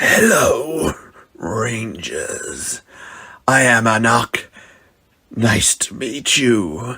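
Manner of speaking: hissing monster voice, words hissed out. Narrator reads the monster Anak greeting the Rangers, Anak's hissing voice. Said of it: "the monster hissed".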